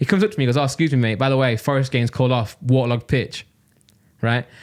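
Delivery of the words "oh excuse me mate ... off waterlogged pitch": usual speaking voice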